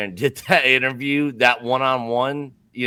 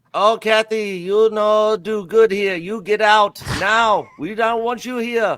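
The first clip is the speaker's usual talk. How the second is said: very high, mixed Japanese and Alabama accent; 9 semitones higher than usual. Asked to voice his thoughts as a woman walked out there: japanese alabama dialect. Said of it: "Give us your best Japanese Alabama dialect".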